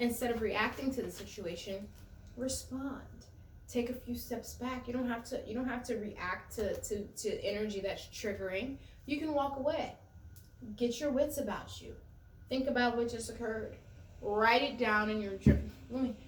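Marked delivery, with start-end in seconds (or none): 14.2-15.6 words "write it down" stressed and louder. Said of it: "I'm stressing that I said it like that".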